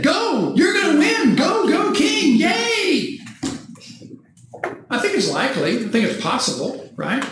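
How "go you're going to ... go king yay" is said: high, shouted sarcastic cheer. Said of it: "but I think that's what he did".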